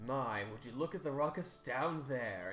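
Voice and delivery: very loud, carrying voice. A game master voicing Eval as he turns against his allies, very loud voice. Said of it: "He says in a very loud voice".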